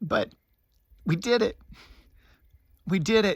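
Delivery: overcome with emotion. Musician reflecting on finishing a recording: getting emotional. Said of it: "I'm getting emotional".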